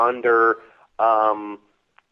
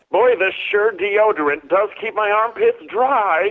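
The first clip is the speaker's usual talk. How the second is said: high, put-on, cartoonish alien voice; 8 semitones higher, 3 dB louder than usual. Saying anything as the cartoon character, in Marvin the Martian voice. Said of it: "You can say anything uh, as Marvin the Martian".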